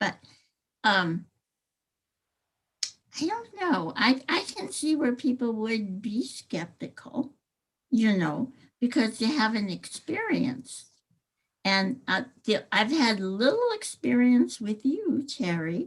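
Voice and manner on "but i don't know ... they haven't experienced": odd-sounding speech around a cough drop in mouth. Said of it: "I got a cough drop in my mouth, so I know I sound really weird".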